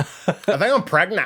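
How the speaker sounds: put-on high, girly, young women's talking style. Mimicking how chicks talk now: imitating how chicks talk. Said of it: "that's how chicks talk now".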